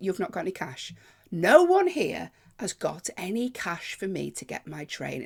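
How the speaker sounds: usual speaking voice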